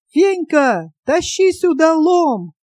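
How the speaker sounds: loud, full-throated hollering yell. A young man answers a girl who is calling for the boys, yelling. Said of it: "и заорал".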